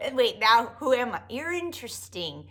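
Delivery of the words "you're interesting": put-on British accent. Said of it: "Now I'm Austin Powers".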